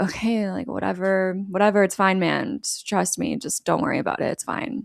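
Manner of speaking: mock eye-rolling dismissiveness. Retelling a film scene where a character brushes off a worry: imitating an eye-rolling, dismissive character. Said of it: "Milk rolls his eyes and is like".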